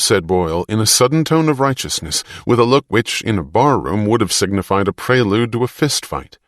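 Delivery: ordinary delivery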